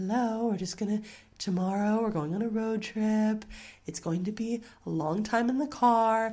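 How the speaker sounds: very calm, gentle, soothing bedtime voice, a bit high. A parent demonstrates telling their kids the day before, in a very soothing voice. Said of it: "in a very soothing voice".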